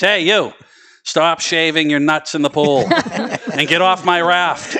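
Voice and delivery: loud, high-pitched scolding yell. Retelling being caught in the pool by mother: imitating mother yelling. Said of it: "my mother still yells at me".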